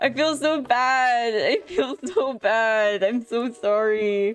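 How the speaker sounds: slow, giggly laughing, composure slipping. Apologizing to someone after seeing their face, laughing, losing composure. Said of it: "I'm losing my composure over this".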